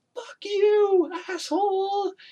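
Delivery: very high-pitched, shrill, loud screaming. Recounting a film scene, voicing an angry police guy: retelling a scream. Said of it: "he's just screaming at him".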